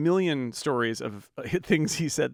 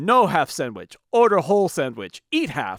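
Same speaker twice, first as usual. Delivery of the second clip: brusque, grumpy put-on Hungarian accent; 3 semitones higher, 7 dB louder than usual. Retelling what the sandwich man told a customer wanting half: Hungarian accent. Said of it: "in his Hungarian accent".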